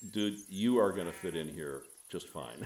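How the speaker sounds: usual speaking voice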